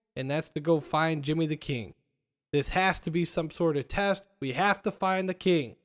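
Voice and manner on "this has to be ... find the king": plain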